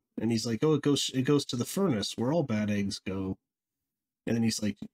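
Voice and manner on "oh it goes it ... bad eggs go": usual speaking voice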